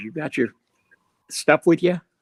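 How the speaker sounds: sneaky stage whisper. Retelling a question someone half-whispered in a van: imitating someone half-whispering. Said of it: "he's whispering in my ear".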